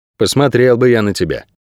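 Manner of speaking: plain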